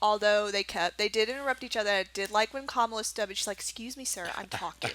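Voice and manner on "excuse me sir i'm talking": put-on motherly scolding voice, quieter. Retelling a debate moment, imitating Kamala Harris, motherly. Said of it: "the motherly figure".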